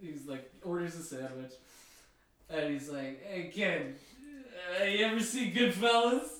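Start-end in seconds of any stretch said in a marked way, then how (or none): 3.3-6.3 put-on drunk tough-guy voice, much higher pitch. Retelling a drunk Ray Liotta talking to a kid, drunk Ray Liotta impression. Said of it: "And it was drunk Ray Liotta".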